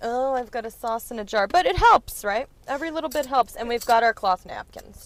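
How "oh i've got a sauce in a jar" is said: usual speaking voice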